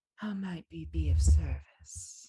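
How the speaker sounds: soft, hushed, discreet, courteous murmur. Narrating a scene, voicing a well-dressed greeter welcoming the listener: hushed tone. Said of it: "in a hushed tone".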